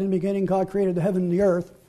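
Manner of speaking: fast, flat, rushed rattled-off delivery.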